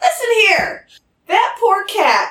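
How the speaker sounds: very high-pitched character voice. A player goes to talk to the kids and switches into character voice. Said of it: "I should probably get my character voice out".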